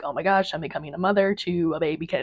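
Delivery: put-on panicked, freaked-out voice. Retelling bringing a new kitten home, imitating own past freak-out. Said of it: "I had a little bit of a freak out".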